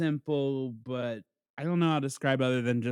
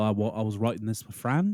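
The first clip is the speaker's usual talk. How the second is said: put-on New Zealand accent; 3 semitones lower than usual. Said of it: "Now he's got the New Zealand accent".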